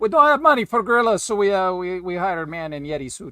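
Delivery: vague, put-on generic European accent. Imitating pitchmen describing a low-budget show: put-on european accent. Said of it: "that's my incredible European accent".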